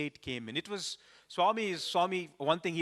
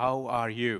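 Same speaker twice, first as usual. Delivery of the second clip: put-on feeble voice, much lower pitch; 3 semitones lower, 3 dB louder than usual. Recalling Swami recognizing him among thousands of students, imitating Swami's feeble voice. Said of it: "in a very, very, very feeble voice".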